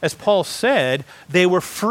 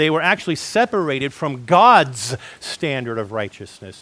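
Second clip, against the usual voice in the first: god's pushed out as the peak stressed word. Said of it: "I put emphasis on the word God's".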